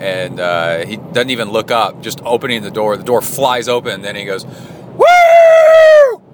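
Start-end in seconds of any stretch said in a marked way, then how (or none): 4.5-6.2 very high, loud whooping shout. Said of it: "like that".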